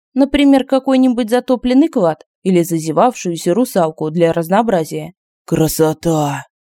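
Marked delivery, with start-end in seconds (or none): 5.5-6.4 whispered, lower pitch. Semyon, leaning far out of the window; whispering. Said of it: "шепотом сказал Семен".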